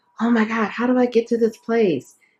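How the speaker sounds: high, panicked, fearful, anxious voice. Imitating a lost stranger asking for directions: imitating a fearful person. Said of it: "people could be in fear about".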